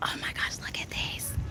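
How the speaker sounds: very quiet, hushed, breathy whisper. Speaker finding a big selection to look through, whispering. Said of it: "I don't know why I'm whispering".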